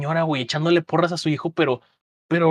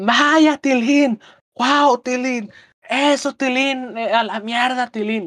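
acted teen-girl cheering, high and drawn-out; 8 semitones higher, 4 dB louder than usual. Retelling a mother cheering at a soccer game: imitating a mother shouting like a teen girl. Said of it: "empezó a gritar".

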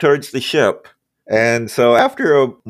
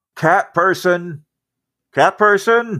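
high holler heard from a distance; 6 semitones higher than usual. The game master voices a Lorndon calling to Rico from elsewhere in the ship: hollering from afar. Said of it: "hollering from somewhere else inside the ship".

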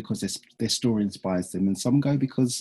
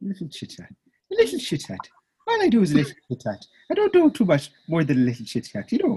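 badly attempted, sing-song Irish accent; 8 semitones higher than usual. Repeating another speaker's words back: horrible attempt at an irish accent. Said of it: "horrible attempt at an Irish accent".

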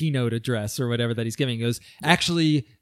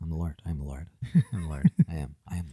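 obsessive, compulsive repetition, lower and quieter; 9 semitones lower, 6 dB quieter than usual. Joking that the writer adds the phrase obsessively: compulsively repeating "I am the Lord". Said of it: "It's compulsive at this point".

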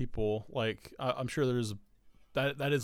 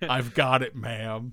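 put-on annoyed tone, louder; 6 dB louder than usual. Retelling own reply to a customer, imitating own pissed-off tone. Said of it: "super pissed off".

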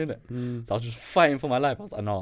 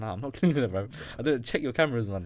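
ordinary delivery

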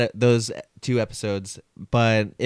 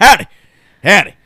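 put-on stern tone, higher and louder; 8 semitones higher, 12 dB louder than usual. Joking about a gangster cowboy, saying howdy: mock stern howdy. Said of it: "Just a stern howdy".

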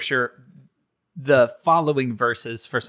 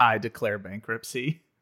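ordinary talk

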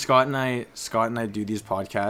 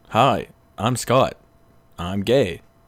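very slow, deliberate, drawn-out, loud character voice; 6 dB louder than usual. Doing an impression of Scott after being asked to: Scott impression. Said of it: "I can do a pretty good Scott impression too".

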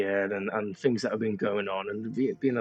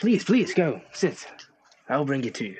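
put-on small young character voice, higher, louder; 5 semitones higher, 5 dB louder than usual. In a role-playing game, voicing a small younger guard: small young guard voice. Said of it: "you're recognized by this small younger guard".

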